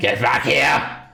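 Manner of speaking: full-throated, rough, high-pitched holler. Voicing a Githyanki warrior who chases the group: yelling. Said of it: "he just sort of yells at you all he can".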